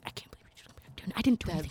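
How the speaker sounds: put-on whisper. Retelling two friends fighting off on their own: imitating a whisper.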